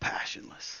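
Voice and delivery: soft, hushed, breathy whisper. Narrating a scene, a woman drops her head and speaks: whispered. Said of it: "she whispers".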